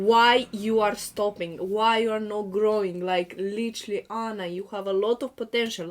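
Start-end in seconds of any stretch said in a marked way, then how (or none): none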